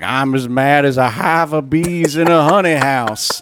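put-on cartoon character voice, played for laughs. Mocking a quote someone said in public, doing a Foghorn Leghorn impression. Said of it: "doing his foghorn leghorn impression".

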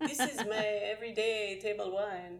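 thick, strong, put-on Italian accent. Imitating a wine shop vice president's line from his video: strong Italian accent. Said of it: "he says it with a strong Italian accent".

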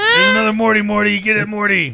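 impatient, urging character voice. Riffing on a new Pocket Mortys game: Rick voice. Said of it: "That's exactly what it's gonna sound like".

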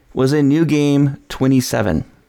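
usual speaking voice

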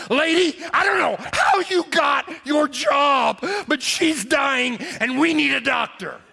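play-acted slow, high-pitched, enraged furious shouting. Recounting holding his dying wife, the man repeats what he told the woman: retelling an angry outburst. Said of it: "And I just lost my mind at that point".

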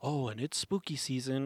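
ordinary delivery

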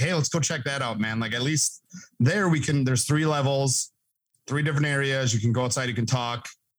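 plain

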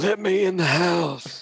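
put-on creepy preacher voice. Talking about Poltergeist 2 with others, imitating the creepy Poltergeist 2 preacher. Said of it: "Ooh, you do that really well".

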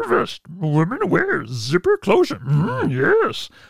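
high swooping, stretched delivery. Reading out an Amazon app's answer describing a product, doing a bad Yoda impression. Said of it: "that was a bad Yoda impression".

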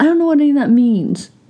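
high-pitched, complaining tone. Retelling what the other speaker used to say: imitating partner's past complaint. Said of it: "and you'd go".

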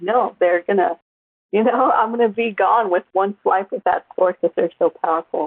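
ordinary delivery

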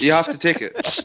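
loud, high-pitched, heavily sarcastic jab.

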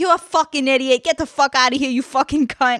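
mock-screaming, high-pitched ranting in New Jersey accent. Recounting a TV scene where a customer screams at a girl, mock-screaming in a New Jersey accent. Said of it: "screaming at this girl, this New Jersey accent".

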